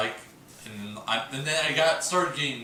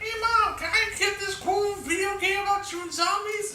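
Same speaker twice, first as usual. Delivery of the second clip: put-on very high young teenage voice. Retelling asking his mom for a game: imitating his fourteen-year-old voice. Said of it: "that's what I sounded like when I was fourteen".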